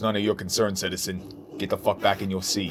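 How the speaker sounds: very low, deep, quiet voice. Retelling a man's reply when asked who he's here for; deeper voice. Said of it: "And he goes".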